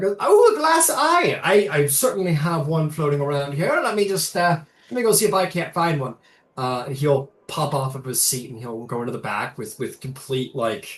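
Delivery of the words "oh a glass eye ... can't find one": put-on Italian accent, loud and high. Retelling a game scene, voicing a gnome: Italian accent. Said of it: "it's supposed to be Italian".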